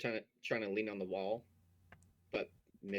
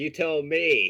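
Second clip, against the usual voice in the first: screaming loudly and slowly. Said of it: "I scream out".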